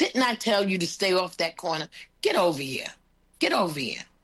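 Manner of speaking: firm, strong, stern mom voice. Speaker retells calling a kid off a corner, strong mother voice. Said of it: "With my strong mother voice".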